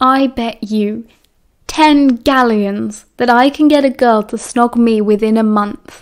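ordinary delivery

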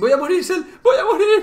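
frantic, very high, loud panic. Playing a game together, calling out to a teammate: panicked. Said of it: "¡No me pongas nerviosa".

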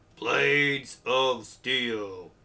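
loud, booming sports announcer calling out. Listing NES games, imitating the game's announcer while saying a title. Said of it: "Trying to imitate the announcer there".

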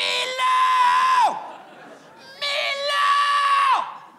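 acted-out yell. Speaker retells trying out a name by yelling it aloud, retelling yelling a name. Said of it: "m'aller le crier".

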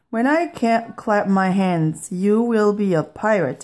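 ordinary delivery

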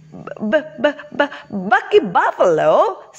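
stammering. The bumblebee answers Bucky Buffalo's news that he will fly; stammering.

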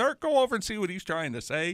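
high-pitched hollering.

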